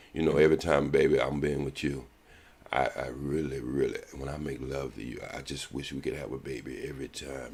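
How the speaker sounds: soft, gentle, low, manly voice. Speaking right by her ear, in a soft, manly tone. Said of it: "I'm gonna say it in a soft tone, but I'm gonna say it in a manly tone".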